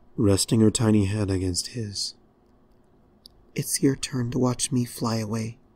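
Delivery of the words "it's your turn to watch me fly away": soft, whispered voice. A pony speaks to the dragon, her head resting against his, whispering. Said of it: "She whispered".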